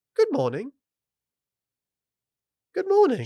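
put-on English accent. Reading a listener's story, quoting the guy's greeting: english accent. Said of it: "again with his English accent".

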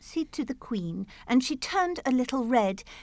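plain reading voice

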